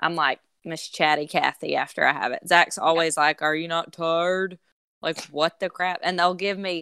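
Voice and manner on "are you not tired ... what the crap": put-on imitation of a man's voice. Retelling what Zach always says to her: bad impersonation of Zach. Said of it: "that wasn't a very good impersonation of him".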